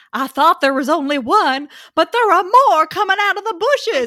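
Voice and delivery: put-on Southern accent. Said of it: "deep Sou-, like, Southern man".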